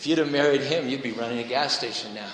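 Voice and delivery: play-acted smug, superior, condescending tone. Retelling a husband leaning over to his wife, mock-smug and condescending. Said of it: "Very smugly and condescendingly".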